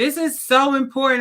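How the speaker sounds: emphatic shouting. Host of episode eighty-eight addressing CEOs: yelling. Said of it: "and I'm yelling because it's important".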